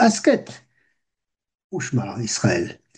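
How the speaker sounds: short pause right after the word "asket". Showing the pasek sign, meaning a short pause: short pause after asket. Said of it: "qui veut dire que l'on doit ménager une courte pause".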